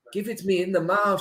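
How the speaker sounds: clumsy fake French accent, very high pitch. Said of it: "the commentary in some dodgy".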